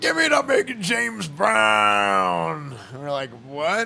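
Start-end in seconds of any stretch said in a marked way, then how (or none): 0.0-2.8 put-on slow, drawn-out, swooping elderly man's voice. Retelling what someone said that made the group laugh, in an old man's voice. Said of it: "It was like an old man's voice".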